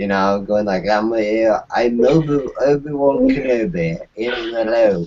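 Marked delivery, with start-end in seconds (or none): 0.9-5.1 put-on drunk character voice, slower pace. Recalling riffing on a drunk Obi-Wan by doing an impersonation: drunk Obi-Wan Kenobi impression. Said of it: "doing an impersonation of him".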